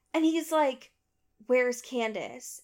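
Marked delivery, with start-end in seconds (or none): 1.4-2.6 very smooth delivery. Retelling what he said after she unlocked the door, in the smoothest voice. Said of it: "And in the smoothest voice".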